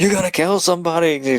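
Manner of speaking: mock panicked freak-out, high pitch. Retelling a movie scene where a husband yells at his wife: imitating someone freaking out. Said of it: "freak out at his wife saying".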